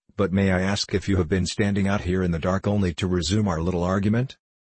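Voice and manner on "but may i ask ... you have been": plain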